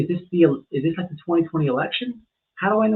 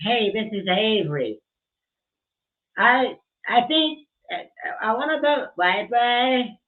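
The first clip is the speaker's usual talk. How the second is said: put-on high, slow, ditzy airhead voice; 5 semitones higher than usual. After listing voice options, the speaker introduces themself in a ditzy airhead voice. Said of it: "Do I do I do airhead?".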